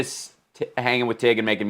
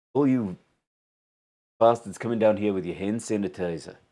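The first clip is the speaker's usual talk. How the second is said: put-on South African accent; 2 semitones lower, 4 dB quieter than usual. The speaker launches into the one accent they do: south african accent. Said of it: "the South African accent".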